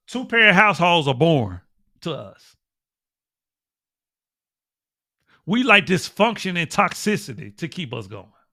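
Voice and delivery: exasperated, frustrated outburst. Making a point to listeners, getting frustrated. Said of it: "I'm getting frustrated".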